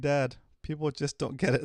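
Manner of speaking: plain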